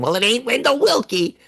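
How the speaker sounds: very high, pitched-way-up gremlin creature voice. Explaining a joke that works either way, quoting a gremlin in a gremlin voice. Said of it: "the voice of the gremlin going".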